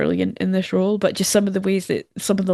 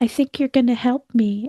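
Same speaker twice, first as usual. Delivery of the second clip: put-on creepy child voice, pitched up high; 5 semitones higher than usual. Retelling a scene where Mika tells Carol to help: creepy child psychic voice as Mika. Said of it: "weird, like, creepy child psychic way".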